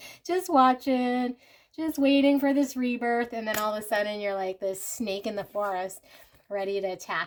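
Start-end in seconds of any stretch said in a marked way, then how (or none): 0.2-3.3 higher, louder laughing and giggling. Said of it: "Sorry, I'm laughing".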